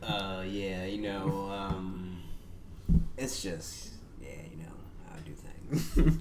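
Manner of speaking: low, raspy voice.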